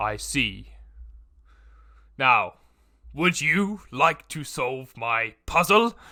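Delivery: booming, goofy, drawn-out monster voice, loud and slow. Voicing a beholder who asks a player to solve a puzzle: comical beholder voice. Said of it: "He says it in almost kind of a comical way".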